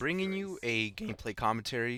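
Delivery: cracking, breaking voice. Opening a gameplay commentary for viewers, voice cracking. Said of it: "My voice just cracked there".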